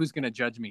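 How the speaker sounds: plain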